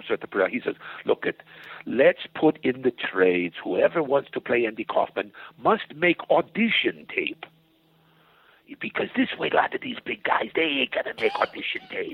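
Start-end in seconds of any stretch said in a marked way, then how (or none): 1.0-7.4 put-on Czech accent. Retelling what the director said: Milos's Czechoslovakian accent. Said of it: "Milos has this Czechoslovakian accent".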